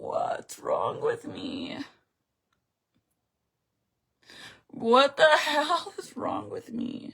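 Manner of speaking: tearful crying voice, words through tears. Live on stream, talking about a special birthday, the speaker is crying. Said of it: "I'm crying over a fucking birthday".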